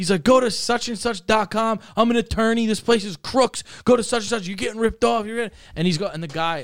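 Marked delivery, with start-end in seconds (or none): 0.2-5.3 put-on screaming, pitched higher and faster. Retelling how an attorney screamed at the couple at the next table: retelling a man screaming. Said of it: "he starts like screaming".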